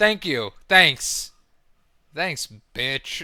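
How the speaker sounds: mock disgusted tone. Voicing a man in a clip as he thanks a woman: imitating someone's disgust. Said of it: "look at the disgust".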